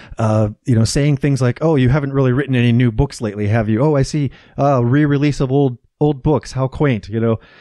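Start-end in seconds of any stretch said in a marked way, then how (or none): none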